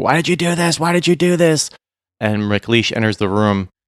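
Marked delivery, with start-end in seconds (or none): 0.0-1.7 mock frantic, high, raw, repeated screaming. Recapping a story scene, imitating a character screaming at another. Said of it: "screaming at him".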